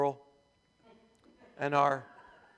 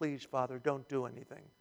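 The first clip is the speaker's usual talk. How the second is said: soft, low, hushed murmur under the breath. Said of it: "under his breath he's going".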